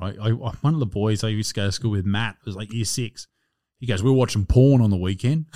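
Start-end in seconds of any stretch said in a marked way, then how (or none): none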